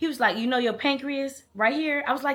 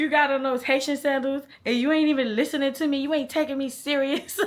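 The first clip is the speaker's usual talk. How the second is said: acted-out, put-on, griping, put-out man's complaining voice; 2 semitones higher than usual. Retelling what the man in the car kept saying: imitating the man complaining. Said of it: "He was like".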